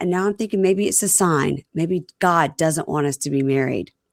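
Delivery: ordinary talk, nothing marked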